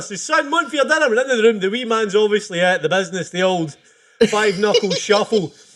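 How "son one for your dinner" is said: mock, very high hollered call. Telling a joke, acting out a dad calling his son for dinner, retelling a shout. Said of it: "he shouted on him for dinner".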